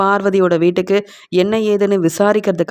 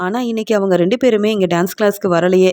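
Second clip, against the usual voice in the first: ordinary delivery, nothing marked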